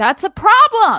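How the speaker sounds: very loud, shrill, high-pitched yell. Speaking up in a group discussion, yelling. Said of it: "I didn't mean to yell".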